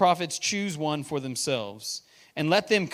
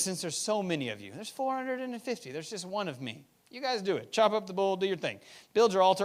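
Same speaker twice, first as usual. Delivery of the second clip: mock sarcasm laid on thick, taunting; 4 semitones higher, 5 dB quieter than usual. Retelling Elijah's words to the prophets of Baal: sarcastic Elijah. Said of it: "sarcasm that's about to be laid out".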